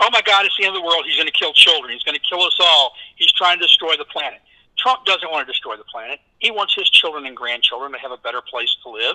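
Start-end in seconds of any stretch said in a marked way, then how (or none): none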